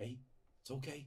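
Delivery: gentle, soft-spoken voice. Voicing a man who walks forward toward creatures: gently speaking. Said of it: "just gently speaking".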